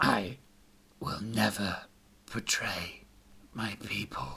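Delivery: trembling, barely audible, low, slow half-whisper. The skinless demon-bodied warrior answers after a deep breath, in a quivering half-whisper. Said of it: "but behind the mask was a very human face, minus the skin. / The warrior's body was purple and very much a demon's torso. / The warrior started to shake his head. / Behind a quivering voice, / It said".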